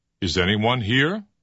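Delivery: pitch rises at the end. Giving a lesson example of a yes-no question, say it with rising intonation. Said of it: "This is called rising intonation".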